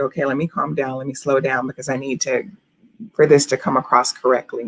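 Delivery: normal talking voice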